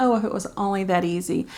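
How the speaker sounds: normal talking voice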